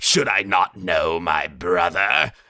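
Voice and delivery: slow, scratchy, back-of-throat voice. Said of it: "scratchy back of the throat".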